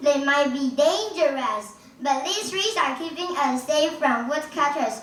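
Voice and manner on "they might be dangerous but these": plain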